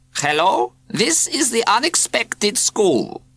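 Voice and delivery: strange, very high cat-like mewing voice. Reading a story, someone answers the radio telephone at the school: strange mewing voice. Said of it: "said a strange, mewing voice".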